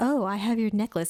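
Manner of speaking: put-on whisper. Retelling a scene where Zuko ties someone up: imitating Zuko whispering. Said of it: "whispering in her ear".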